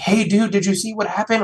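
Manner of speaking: mock frantic freaking-out, high and rushed. Retelling running bloody to a guy at his door, retelling being frantic. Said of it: "I'm like frantic".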